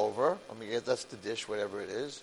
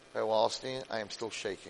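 ordinary talk

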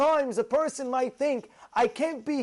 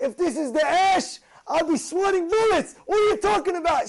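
screaming at the top of the lungs; 4 semitones higher, 3 dB louder than usual. Retelling how a rabbi screamed back about the heat: imitating Rav Lamed screaming. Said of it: "He starts screaming at me".

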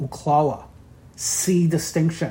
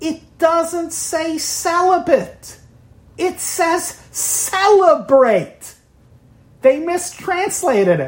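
very high, stretched-out, drawn-out screaming; 13 semitones higher than usual. Telling a joke about a monk found in a basement: imitating a monk screaming. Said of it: "he's screaming".

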